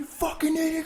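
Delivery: furious, very high, screaming yell.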